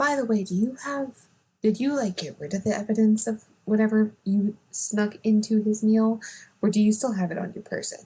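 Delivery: whispering. Speaking privately to another character in the middle of a scene, whispering. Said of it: "I'm gonna just like whisper to Perrin".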